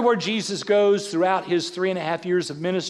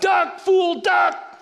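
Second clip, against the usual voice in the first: shrill, very high, acted shouting; 12 semitones higher than usual. Retelling a movie outing where Annie shouted at the screen: imitating Annie shouting. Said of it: "Annie shouts out".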